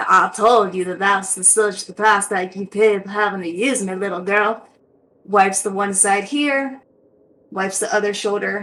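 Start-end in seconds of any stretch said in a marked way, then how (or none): 0.0-4.7 put-on elderly grandmotherly voice with deep American South accent. Voicing a blade that scolds the girl wiping it: old deep southern grandma voice. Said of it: "old deep southern, like, kinda grandma sort of voice".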